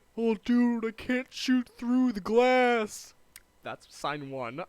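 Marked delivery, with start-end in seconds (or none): 0.2-3.1 very loud, very high, drawn-out, booming gamer moan. Listing signs of Call of Duty players: imitating a Call of Duty player. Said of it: "first clue".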